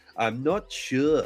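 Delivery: put-on Scottish accent. Imitating a game character who sounds Scottish: Scottish Obi-Wan voice. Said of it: "he just goes".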